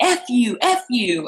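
play-acted screaming, very high and very slow. Telling about guys in the next car cursing at you, retelling a scream. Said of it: "they start screaming".

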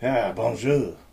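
fake French accent, laid on thick. A podcast co-host answers his introduction: fake French accent. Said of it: "still doing the weird voices".

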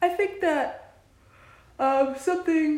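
words pushed out mid-yawn. In a casual conversation, talking through a yawn. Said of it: "I probably shouldn't talk while I'm yawning".

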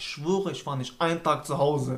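plain

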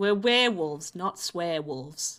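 bad but passable New Zealand accent. Quoting the werewolves from a show: not terrible New Zealand accent. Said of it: "That's a not terrible, uh, New Zealand accent".

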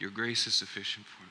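put-on murmuring under the breath. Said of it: "as he's laying there under his breath".

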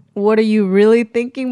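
ordinary talk, nothing marked

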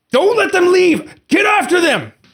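screaming, pitched high and loud.

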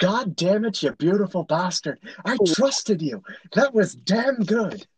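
put-on high Irish accent. Quoting a game character's response after a fight: Zane's Irish accent.

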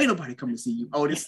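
hard, hostile, aggressive, cutting delivery. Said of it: "he just said it with that much aggression".

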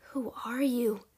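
hushed whisper. She asks the boy who he is, whispering. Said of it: "she whispered".

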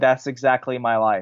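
ordinary talk

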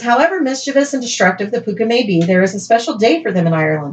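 ordinary delivery

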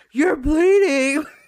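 very loud, high-pitched, blurted yell. Showing what not to do when someone is bleeding: imitating someone yelling. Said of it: "Don't freaking yell out".

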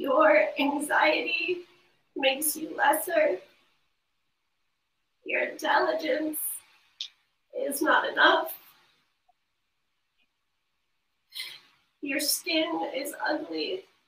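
tearful, crying through the words. Speaker struggling even to say the words aloud: crying while speaking. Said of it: "I'm already crying".

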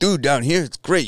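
put-on casual New York accent. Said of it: "I'm gonna fuck his accent up".

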